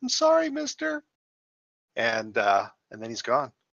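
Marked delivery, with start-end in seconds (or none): 0.0-1.0 put-on very high, rough, creaky little boy voice. Retelling what a voice said from the distance, in a little boy's voice. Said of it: "sounds like a little boy's voice say".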